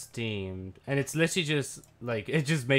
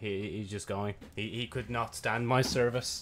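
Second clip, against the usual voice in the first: ordinary talk, nothing marked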